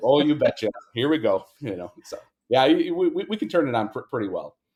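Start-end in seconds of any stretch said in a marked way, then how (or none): 0.0-1.5 Minnesotan, upper Midwest accent. Retelling what was said on customer calls: Minnesotan accent. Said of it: ""Speak Minnesotan to us."".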